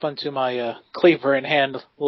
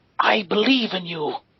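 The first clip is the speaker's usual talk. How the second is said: higher-pitched, encouraging whisper; 6 semitones higher than usual. Leaning in to encourage a strutting companion: whispering in character. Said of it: "lean in and then whisper out and say".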